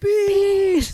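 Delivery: very shrill, very high scream, held long. Retelling a movie scene where the characters start screaming: imitating Tommy screaming. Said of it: "they start screaming and Tommy's like".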